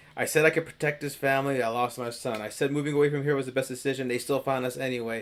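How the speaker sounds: usual speaking voice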